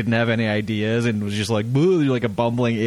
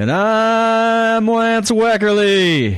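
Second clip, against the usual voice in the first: very high, loud baseball announcer voice, drawn-out "I'm"; 11 semitones higher, 6 dB louder than usual. Co-host introducing himself at the show's opening, baseball announcer voice. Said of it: "Sound like a baseball announcer there".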